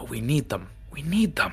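hushed whisper. Some in the crowd whisper among themselves: whispering. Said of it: "just whispering".

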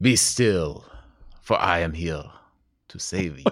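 put-on slight French accent. Playing the hero of an improvised radio serial: El Gerardo voice, French-sounding accent. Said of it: "Like French".

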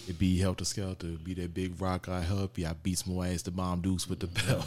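plain

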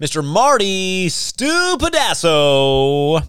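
grand, slow, loud announcer build-up.

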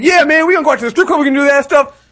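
loud bragging guy voice. Acting out a married guy bragging in public: loud bragging guy voice. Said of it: "all loud in public".

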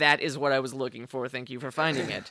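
mock very stern, firm, direct, no-nonsense delivery. Retelling her answer when offered the spiked bracelet: imitating a very stern, direct reply. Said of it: "very stern, very direct".

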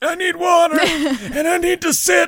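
put-on very high, drawn-out elderly voice. Retelling a scene where a bully turns into an old man: old man voice. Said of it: "he actually becomes, like, an old man".

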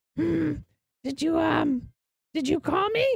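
small, very high, slow goblin creature voice. Voicing a small jungle goblin answering a call at the door: small jungle goblin voice. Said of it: "you see the small jungle goblin standing in front".

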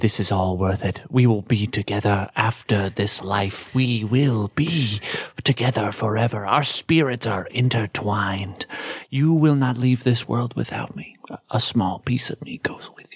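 soft, close, fake intimate whispering. Narrating a scene, speaking as Vaunch, head pressed to another character's, whispering. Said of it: "he's just whispering like".

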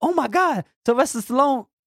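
very high, loud, blurted exclamation that carries. Retelling the boss's reaction to the news: imitating a loud exclamation. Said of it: "So loud that everybody started looking".

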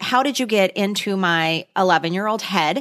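plain

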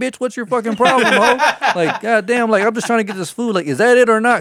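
play-acted very high, shrill, loud screaming. Retelling a fight with a man at a store, re-enacting screaming at him. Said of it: "I'm starting to scream at him".

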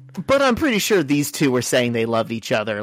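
usual speaking voice

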